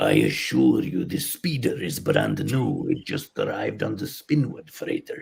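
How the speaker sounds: deep put-on Russian accent. Recalling his reply in a scene to a complaint about the speeder: stereotyped Russian car salesman voice. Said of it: "stereotyped uh, Russian car salesman".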